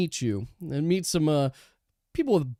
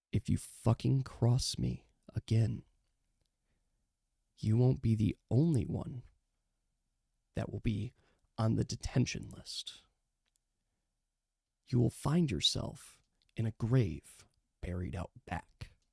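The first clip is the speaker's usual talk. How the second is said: quiet menacing tone, lower pitch and quieter; 5 semitones lower, 8 dB quieter than usual. Voicing a character who leans into a player's ear to threaten him: menacing threat into the ear. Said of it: "just into your ear, so only you can hear this".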